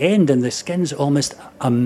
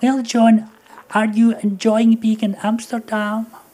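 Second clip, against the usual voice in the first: moany, whiny tone; 8 semitones higher than usual. Retelling a woman asking him about Amsterdam, imitating Jeanette's moany voice. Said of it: "she had a kind of moany voice".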